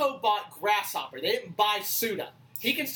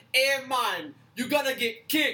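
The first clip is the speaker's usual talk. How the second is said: slow, drawn-out fake Brazilian accent; 4 semitones higher than usual. Imitating a Tekken fighter's line: Eddie Gordo voice. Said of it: "That is not Brazilian".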